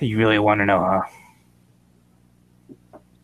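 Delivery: weary sigh, in character. Voicing the bird character answering a question: sighing in character. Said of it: "He just sighs".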